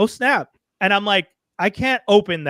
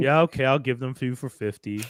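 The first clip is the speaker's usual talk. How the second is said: play-acted, defeated, beaten-down, resigned voice; 6 semitones lower, 5 dB quieter than usual. Retelling a vendor accepting a haggled price: imitating a defeated voice. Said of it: "you can hear the defeat in his voice".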